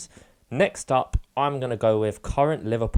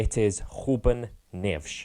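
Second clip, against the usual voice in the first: put-on Portuguese accent, quieter and slower; 3 dB quieter than usual. Revealing the footballer's name at last, in a fake portuguese accent. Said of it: "That was a really nice Portugal accent".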